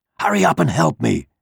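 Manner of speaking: rasping, high, rough hissed voice. A frightened rooster urges a mouse to help him, hissing. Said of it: "he hissed at the mouse".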